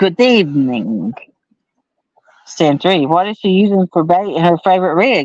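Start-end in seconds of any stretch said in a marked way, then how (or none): 0.0-1.1 low, put-on Russian vampire accent. Reading a chat greeting aloud, vampire Russian accent. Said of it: "That's my vampire Russian accent".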